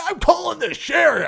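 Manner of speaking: very high, shrill, raspy, raving, furious yell. Telling the story of the guy on the boat, imitating a raving mad man. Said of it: "stark raving lunatic mad".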